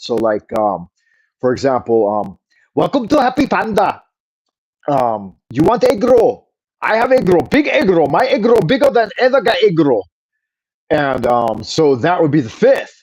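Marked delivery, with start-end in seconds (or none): 2.7-10.1 put-on Chinese or Japanese style accent, pitched up. Ranking accents, the speaker gives an example, put-on Chinese or Japanese style accent. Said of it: "your Chinese or Japanese style accent".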